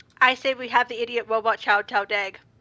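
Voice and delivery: flat, emotionless deadpan monotone. Voicing a character who names the party's idiot: deadpan, almost no emotion. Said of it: "say deadpan with almost no emotion".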